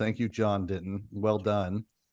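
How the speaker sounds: deadpan, flat, dry, mock-sincere sarcasm. Thanking someone whose report made people freak out: sarcastic. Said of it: "That was sarcasm".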